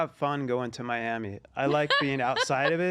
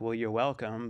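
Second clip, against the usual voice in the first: mock muttering under breath, lower; 3 semitones lower, 4 dB quieter than usual. Retelling your reply when people you hold doors for don't say thank you, muttering under breath. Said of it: "I'm just kind of under my breath like".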